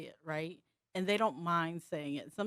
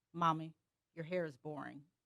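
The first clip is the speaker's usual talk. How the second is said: put-on deadpan child voice; 3 dB quieter than usual. Retelling what a three-year-old daughter said with a straight face: imitating a deadpan child. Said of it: "with the straightest face".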